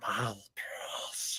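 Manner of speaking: hushed, all-breath whisper. Showing another speaker how Gollum sounds: Gollum voice. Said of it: "no, this is Gollum".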